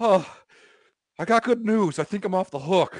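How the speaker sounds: mock winded, high, loud breathless panting rush. Retelling Robbie coming up in the hallway: imitating Robbie out of breath. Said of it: "Robbie sounds like he's out of breath".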